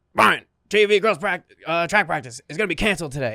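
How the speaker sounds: drill-sergeant yell, reined in. Retelling a scene where he played a drill sergeant to Brian, retelling a drill-sergeant yell. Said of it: "I'm yelling him at him as a drill sergeant".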